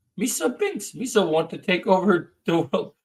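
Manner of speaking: silly, goofy, cartoonish alien creature voice. Speaker showing off a voice during a chat, Jar Jar Binks voice. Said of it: "Jar Jar now".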